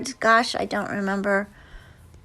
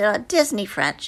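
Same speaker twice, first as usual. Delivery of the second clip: plain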